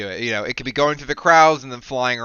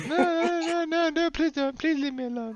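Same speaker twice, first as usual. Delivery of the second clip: very high-pitched sobbing, crying and pleading voice; 6 dB quieter than usual. In an actual play, a merchant being beaten in the marketplace pleads, crying. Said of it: "He's like his fingers in the bottle, / They're just beating the shit out of this merchant. / still crying".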